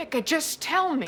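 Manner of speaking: high-pitched, insistent yelling. In a drama scene, Mel presses Becca to tell her, yelling at Becca. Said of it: "Why are you yelling?".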